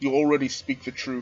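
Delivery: ordinary delivery, nothing marked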